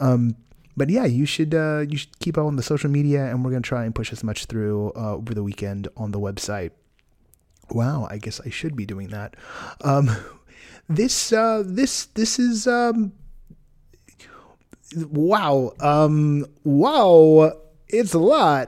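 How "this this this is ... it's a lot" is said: drawn out, with pauses between words. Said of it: "the worst Christopher Walken I have ever".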